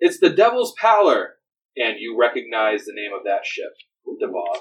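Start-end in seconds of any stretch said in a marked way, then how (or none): 0.0-1.3 high, shouted call. Voicing a lookout who shouts back the ship's name: shouting lookout. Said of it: "and he shouts back".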